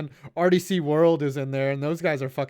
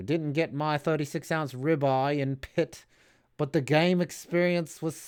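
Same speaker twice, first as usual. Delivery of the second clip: put-on London accent, not great, drifting toward Australian. Reading a quote aloud in a put-on London accent. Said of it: "I'm going to read this in my in my London accent".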